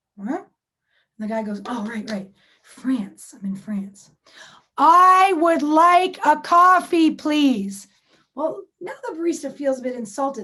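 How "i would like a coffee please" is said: booming, very loud, very drawn-out yell. Retelling a guy ordering coffee from a barista in France, retelling a shout. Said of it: "You don't have to shout at me".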